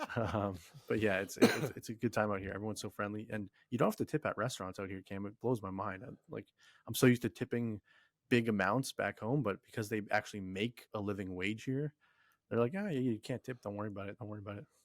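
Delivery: soft, hushed late-night voice.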